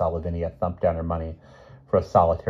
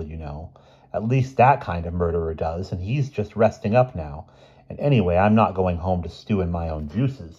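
plain reading voice

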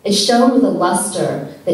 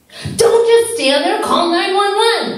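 very high, full-voiced screaming; 12 semitones higher than usual. A mother holding her shot son yells at Gene: screaming. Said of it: "screamed his mother".

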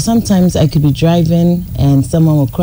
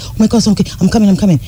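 acted panic, much higher pitch; 4 semitones higher than usual. Retelling hearing news about the house, acting out past panicking. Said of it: "sees that I'm panicking".

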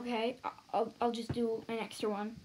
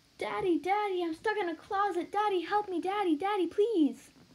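high voice, spoken with mouth hanging open; 8 semitones higher than usual. Demonstrating a line with the mouth open, for comparison with mouth closed. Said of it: "here's with my mouth open".

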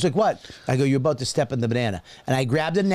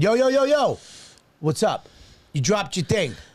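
put-on loud, drawn-out, high-pitched calling-out voice; 6 semitones higher than usual. Retelling calling out to someone who dropped food: imitating own loud call-out. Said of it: "I went".

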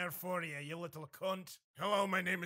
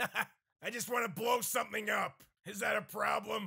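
cartoon raccoon voice; 4 semitones higher, 4 dB louder than usual. Running through a string of impressions, the speaker does a Rocket Raccoon voice. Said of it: "Rocket Raccoon here".

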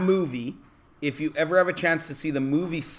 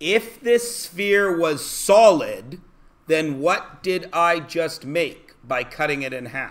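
slow, deliberate, carefully spelled-out delivery. Repeating a question to listeners a second time, slower. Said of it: "I'll say it slower".

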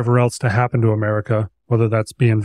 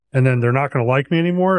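ordinary talk

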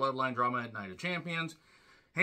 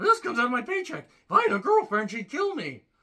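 high, loud nerdy voice cracking mid-word; 9 semitones higher, 7 dB louder than usual. Speaker doing a bit as a nerd from the census: nerdy voice-cracking voice. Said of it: "have the nerdy crack voice".

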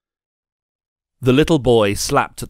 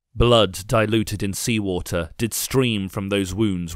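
usual speaking voice

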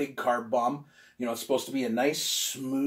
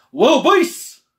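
very loud, very high, exuberant call-out with gusto; 12 semitones higher, 15 dB louder than usual. Signing off, repeating the name one more time: "Little Beasts" with gusto. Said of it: "because I love saying it with gusto".

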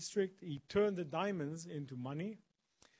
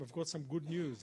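usual speaking voice

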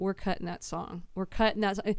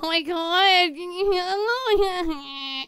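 put-on very high, shrill, weepy, whiny little girl voice; 9 semitones higher, 5 dB louder than usual. Speaker shares a pet peeve, showing how some girls talk: whiny girly voice. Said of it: "When girls talk like this".

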